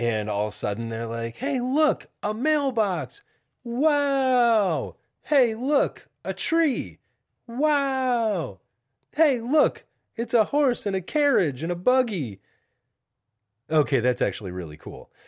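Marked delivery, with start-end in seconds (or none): 1.4-12.4 mock very high, over-the-top, swooping sarcastic awe. Acting out what two kids said, imitating sarcastic kids. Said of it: "two of the most sarcastic kids on the face of the earth".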